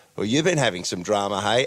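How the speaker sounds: ordinary delivery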